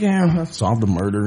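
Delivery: breezy, casual, offhand no-big-deal tone. Retelling what a man said about solving a murder: imitating someone nonchalant. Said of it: "he's so nonchalant about it".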